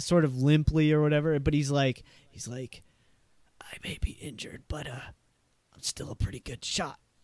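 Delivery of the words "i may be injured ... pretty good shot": very quiet, hushed, breathy whisper. Voicing an injured character looking up at two others: whispering in character. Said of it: "as quietly as he can, sort of looks up to you two and whispers".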